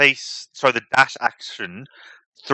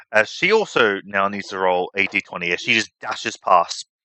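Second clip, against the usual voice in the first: normal talking voice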